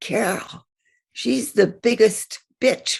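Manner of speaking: hoarse, rasping, witch-like stage whisper. Retelling what a girl behind said at graduation: imitating a hoarse stage whisper. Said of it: "in a stage witch whisper".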